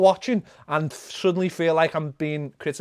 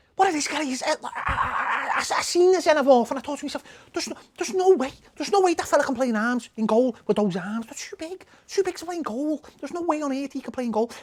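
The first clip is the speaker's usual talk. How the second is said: put-on voice, pitched very high; 9 semitones higher than usual. Finishing with a viewer-requested impression: Carragher impersonation. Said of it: "Eric wants a Carragher impersonation".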